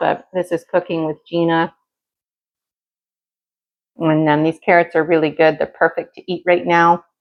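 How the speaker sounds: talking with food in mouth, chewing. On cooking with gina, the host sneaks a carrot piece: talking with food in mouth. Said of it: "It's rude to talk with food in your mouth".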